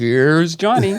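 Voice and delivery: talk-show announcer intro voice. Recalling a late-night show opening, imitating Ed McMahon. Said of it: "you would hear Ed McMahon in the background going".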